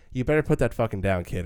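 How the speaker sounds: put-on threatening delivery. Recapping a film scene, retelling how she warns the kid, mock-threatening tone. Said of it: "or else I'm going to cause some shit right now type of tone".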